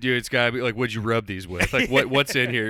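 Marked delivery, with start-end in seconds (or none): none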